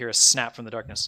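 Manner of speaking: ordinary delivery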